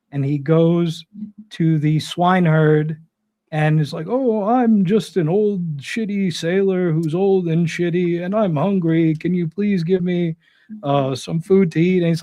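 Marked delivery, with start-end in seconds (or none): 4.1-12.0 put-on ragged, down-and-out old sailor voice. Retelling an Odyssey scene, the hero disguised as an old man: put-on shitty old man voice. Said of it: "disguised as a shitty old man".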